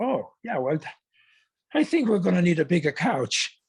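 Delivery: swooping cartoon doctor character voice. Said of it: "And then Scratch and Sniff says".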